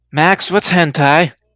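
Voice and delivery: confiding, hushed stage whisper, close to the ear. Voicing a character who half-whispers a question into a player's ear: half-whispering. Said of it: "whispers into your ear".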